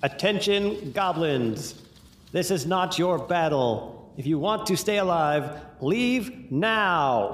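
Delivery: public proclamation style, drawn out on now. A game player's character magically amplifies their voice to warn the goblins: booming announcement. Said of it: "make my voice up to 3 times as loud as normal".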